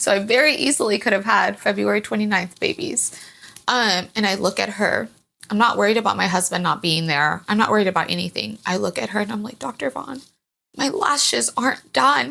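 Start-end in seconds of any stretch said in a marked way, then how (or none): 9.6-12.3 put-on tearful, crying voice, higher. Retelling own words to the doctor before the birth: imitating own past crying. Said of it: "I'm just crying".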